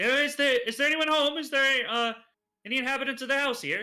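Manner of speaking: calling out loudly, shouting. Calling out to a farmhouse to ask if anyone's home: calling out loudly. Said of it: "I call out to the home".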